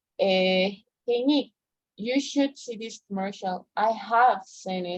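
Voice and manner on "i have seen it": extra force, heavy stress on have. Explaining English auxiliaries in Spanish, an example reply: stress on have. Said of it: "lo único que hacemos es darle más fuerza a la palabra para darle más énfasis".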